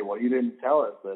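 normal talking voice

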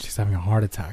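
ordinary delivery

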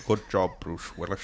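quiet, soft, hushed put-on voice. Riffing on a movie scene with others, a Sean Connery impression. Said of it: "That was a great Sean Connery".

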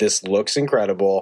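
ordinary talk

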